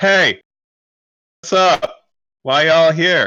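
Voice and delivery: loud, high, drawn-out yell. Playing a character, calling down to people at the gate: yelling down to the gate. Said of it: "I'm gonna yell down".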